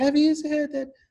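very high, put-on pixie voice. Acting out a woman getting her line wrong before her best friend candidates, use the pixie voice. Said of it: "she was using the pixie voice".

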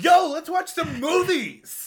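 hyped-up, over-eager, high voice with swooping excited pitch. Retelling the other speaker's opening: imitating an enthusiastic friend. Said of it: "And you're like".

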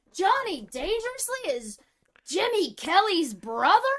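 loud drawn-out exclamation. Retelling a movie scene outside a janitor's closet: imitating a loud exclamation. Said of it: "he says real loud".

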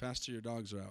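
gentle, understated, very quiet, very low murmur. Retelling how Jerry actually warned the pastor: imitating Jerry's subtle, nice tone. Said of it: "that subtle, nice".

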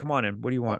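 put-on smooth, charming voice. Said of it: "He's got the voice".

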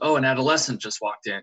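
put-on offhand, casual, matter-of-fact plain delivery. Speaker retells what a man suddenly said while they sat there, retelling a flat matter-of-fact remark. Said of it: "he said it so matter of fact".

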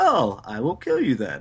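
normal talking voice

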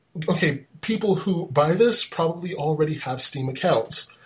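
ordinary talk, nothing marked

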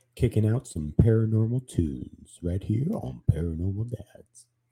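sultry, smooth radio DJ style voice. Podcast co-host opening the new episode, in a sultry radio voice. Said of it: "Look at [name] with that sultry".

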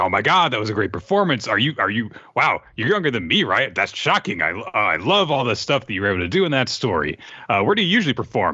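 mock overexcited, eager, swooping babbling gush. Retelling a character's gushing praise after a performance: imitating an enthusiastic fan. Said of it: "he's just really enthusiastic".

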